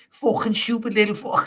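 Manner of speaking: high-pitched mock Scouse accent, ranting. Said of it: "What was that accent?".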